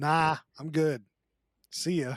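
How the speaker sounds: ordinary talk, nothing marked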